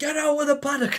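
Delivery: very high, shouted. Retelling a zookeeper ordering them out of the kangaroo paddock, retelling a shout. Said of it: "he's shouting at me".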